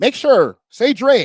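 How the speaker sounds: super squeaky, high, slow, drawn-out voice.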